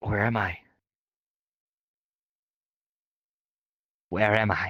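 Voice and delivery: barely audible, very faint voice. Narrating a dream scene, as a voice heard in your sleep, very faint. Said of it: "It's very faint".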